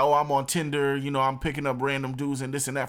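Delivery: ordinary talk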